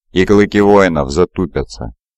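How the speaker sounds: ordinary delivery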